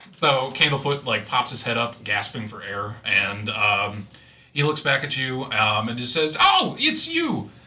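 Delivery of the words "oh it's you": very high, squeaky, completely different voice. Narrating a reunion as Candlefoot pops up gasping: Candlefoot's own voice. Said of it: "he says it in his voice".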